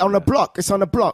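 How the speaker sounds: put-on East London accent. Showing a listener the accent they expected to hear, in a put-on East London accent. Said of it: "thought you were gonna do the whole thing in the accent".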